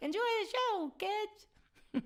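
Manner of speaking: very high, squeaky, bright cartoon voice. Acting out the universe telling you not to take yourself so seriously, in a Mickey Mouse voice. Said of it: "talking in my best Mickey Mouse voice".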